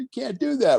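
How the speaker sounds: mock giggling voice, pitched way up high. Retelling how a guy reacted, imitating someone laughing and giggling. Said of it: "he's laughing and giggling like".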